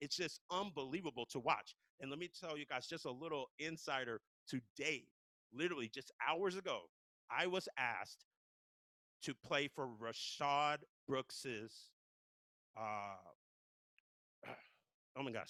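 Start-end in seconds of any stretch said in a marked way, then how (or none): 7.3-15.5 slow, choked-up voice, fighting back tears. Announcing being asked to play for a viewing service: holding back tears. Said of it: "I'm trying to keep it together".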